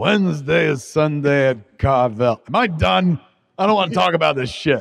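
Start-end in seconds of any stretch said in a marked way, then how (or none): 0.0-2.4 put-on disinterested pitchman voice. Imitating an ice cream company owner in his own commercial: Tom Carvel impression, disinterested. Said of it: "This guy sounds like he's disinterested in his ice cream".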